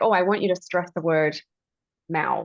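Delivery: ordinary delivery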